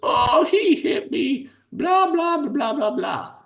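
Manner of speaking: put-on very high, slow, drawn-out tearful crying whine. Retelling a daughter coming to dad after being hit: imitating a crying daughter. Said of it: "she comes crying to dad and says".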